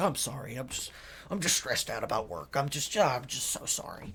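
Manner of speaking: whispered, hushed, breathy, apologetic voice. Retelling how his dad calms down after freaking out, imitating dad apologizing. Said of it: "he becomes apologetic".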